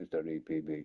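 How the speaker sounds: low, very serious, dead serious voice.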